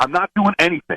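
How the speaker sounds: high-pitched yell. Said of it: "Well, then stop yelling".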